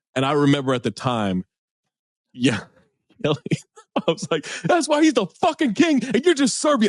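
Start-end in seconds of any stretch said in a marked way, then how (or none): 4.7-6.9 rushed, very high screaming outburst. Speaker recalls screaming at no one over a basketball play, retelling a scream. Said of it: "I'm just screaming at".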